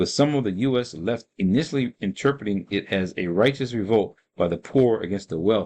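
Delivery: ordinary delivery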